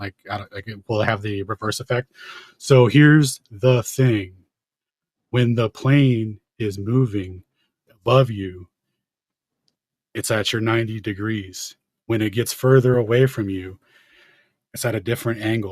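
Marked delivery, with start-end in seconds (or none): 2.6-15.7 put-on exaggeratedly slow talking. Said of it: "maybe if I speak really slowly like you were doing".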